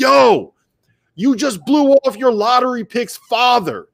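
acted-out, very high, drawn-out shriek at full volume. Retelling a coach calling out a guest in a quiet gym: imitating Roy Williams screaming. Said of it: "screams at the top of his lungs".

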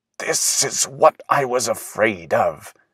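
soft, muttered words, half to oneself. Willis, stopped dead before a tall flower, speaks to himself; muttered. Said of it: "muttered Willis".

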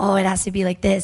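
ordinary talk, nothing marked

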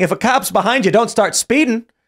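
mock talking through laughter. Retelling what the cop who pulled him over said, imitating a cop laughing. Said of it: "walks in my car laughing".

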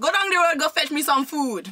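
put-on Jamaican accent held all the way through. Taking a turn in an accent challenge, doing a Jamaican accent. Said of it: "the first accent for doing is the Jamaican accent".

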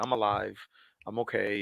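slow, numb, flat robot-like monotone. Retelling a phone call to mom after surviving: imitating own robotic flat voice. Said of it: "I sounded like a robot 'cause I didn't say much".

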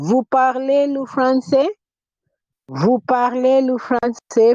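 voice rising in pitch on "français". Teaching french, showing how intonation turns the statement into a question: rising question intonation. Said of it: "if I use intonation".

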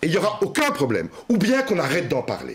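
mildly irritated voice, starting to heat up. Making a point about who should be involved, getting a bit worked up. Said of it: "mais là je m'énerve un peu".

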